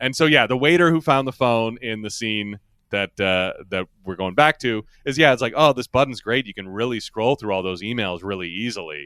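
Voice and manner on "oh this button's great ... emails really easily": put-on, bone-dry, low, flat, expressionless deadpan. Retelling what a waiter says in a scene: imitating a deadpan line. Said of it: "he just kinda says it very, uh, you know, deadpan like that".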